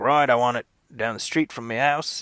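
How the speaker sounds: put-on generic, casual all-purpose Australian accent. Imitating an actor negotiating a shoot near home: Chris Hemsworth impression. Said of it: "that's my Chris Hemsworth slash Hugh Jackman impression".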